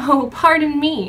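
fake sugary politeness. Narrator apologizing to a royal after bumping into him, in a fake sweet voice. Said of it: "speak in a fake, sweet voice".

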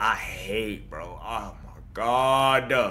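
low, soft, grieving tone with bitterness.

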